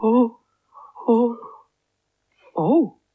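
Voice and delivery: anxious, uneasy, nervous repeated "oh". Asked by the magician to do the magic rhyme, the character responds: nervous.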